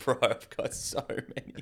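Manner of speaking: laughing while speaking, put-on. Retelling a friend's reply when asked for snacks: imitating friend laughing. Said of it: "he starts laughing".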